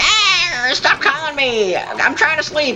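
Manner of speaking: put-on high, whiny, angry old lady voice, not shrill.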